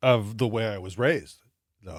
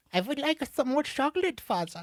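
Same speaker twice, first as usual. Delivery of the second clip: put-on very high, childish German accent. Podcast host playing a child speaking to his father, in a German child accent. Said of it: "Do a kid doing German".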